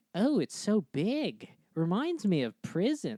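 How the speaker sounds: slow, camp, very flamboyant voice.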